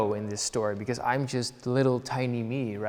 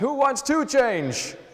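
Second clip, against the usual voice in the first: mock very high, loud calling shout; 13 semitones higher, 5 dB louder than usual. Describing the comic's second panel question: imitating someone shouting. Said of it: "he shouts".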